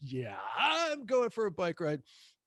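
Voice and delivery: play-acted, openly giddy, swooping sing-song delivery. Retelling telling a partner about going for a bike ride: imitating own giddy voice. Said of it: "I heard that giddiness in your voice".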